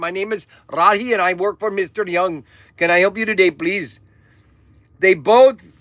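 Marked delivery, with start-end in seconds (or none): 0.0-4.0 put-on Indian accent. Announcing he'll now play a manservant answering calls, in an indian manservant voice. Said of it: "I'm going to be an Indian manservant".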